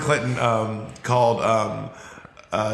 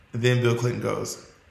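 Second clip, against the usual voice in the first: ordinary talk, nothing marked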